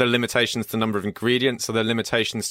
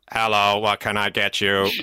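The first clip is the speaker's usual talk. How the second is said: mechanical robotic delivery. Describing a drink-making robot dog that scurries up to a table: robot voice. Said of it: "says in my robot voice".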